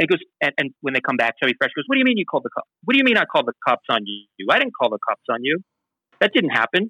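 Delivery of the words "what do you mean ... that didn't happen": acted, point-blank, swooping, insistent tone. Retelling how Chubby Fresh denied calling the cops: imitating a flat denial with straight face. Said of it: "fully straight face".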